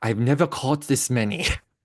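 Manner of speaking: put-on smooth Austrian accent. Retelling catching ravens, Matthias speaks in his smooth Austrian accent. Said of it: "in that smooth Austrian accent in English".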